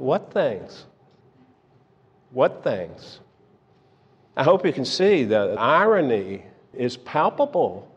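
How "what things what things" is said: put-on, mock deadpan tone. Speaker retells Jesus answering a question, retelling a deadpan reply. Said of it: "a deadpan response".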